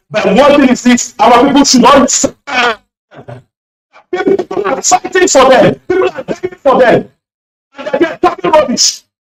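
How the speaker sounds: fast, deeply emotional, heartfelt, impassioned outpouring. Speaker addressing a pastor, apologizing for being so emotional, impassioned. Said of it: "I'm sorry for being so emotional".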